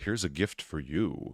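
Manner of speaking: very creepy, eerie, unsettling, low and slow voice. Retelling a scene where a man hands a couple a gift box, very creepy voice. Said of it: "he says in this very creepy voice".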